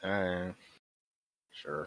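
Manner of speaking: unenthusiastic. Agreeing to a suggestion to storm the office: unenthusiastic. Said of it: "don't sound so excited".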